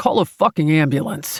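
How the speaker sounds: commanding, growled voice. Reading a scene where the rescuer orders someone to call an ambulance: growling. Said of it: "my savior growls at the kangaroo guy".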